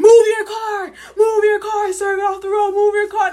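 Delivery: very loud, very high bellowing cop yell. Retelling a story of police yelling at a driver: imitating a cop yelling. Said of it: "the police starts yelling at him".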